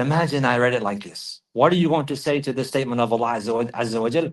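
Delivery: ordinary talk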